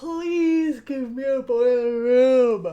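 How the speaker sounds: very slow, drawn-out words spoken mid-yawn. Speaker planning a layout after too little sleep, yawning. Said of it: "Sorry, I'm yawning".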